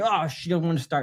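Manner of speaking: normal talking voice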